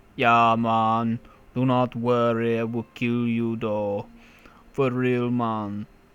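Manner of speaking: put-on accent, part Jamaican, part Austrian. Speaker trying out an accent for lines into a microphone, part Jamaican, part Austrian. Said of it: "like part Jamaican and part Austrian".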